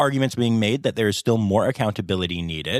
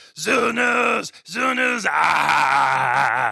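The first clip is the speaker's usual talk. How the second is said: very slow, rough creature holler; 7 semitones higher than usual. Celebrating a Muppets release by starting zoo news in Animal voice. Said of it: "entirely in my animal voice".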